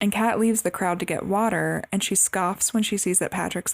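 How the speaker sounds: ordinary talk, nothing marked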